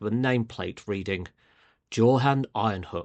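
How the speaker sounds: ordinary delivery, nothing marked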